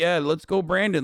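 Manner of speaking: put-on happy, giddy, delighted voice. Retelling how a man cheered: imitating a happy, giddy voice. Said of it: "He sounds so happy and giddy".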